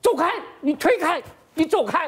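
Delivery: loud, high-pitched shouting.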